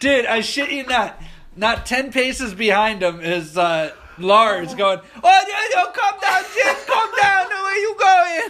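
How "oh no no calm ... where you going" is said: very high-pitched, calling-out yell. Retelling a chase down a school hallway, imitating Lars yelling. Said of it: "Just fucking yelling at him".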